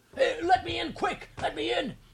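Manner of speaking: high, rasping, excited voice, squeaky on quick. Reading a story, a man bangs on the door to be let in, rasping excited voice. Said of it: "the rasping, excited voice".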